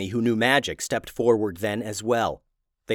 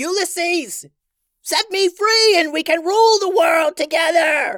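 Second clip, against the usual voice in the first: desperate, very high, drawn-out shrieking yell; 5 dB louder than usual. Reading a story, the witch queen grabs the hero's wand, yelling. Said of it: "The evil witch queen flew above the heroes. / But she was mindless rage and would never allow her power to be taken or even shared. / Her dress rippled in the wind behind her as she sped through the a".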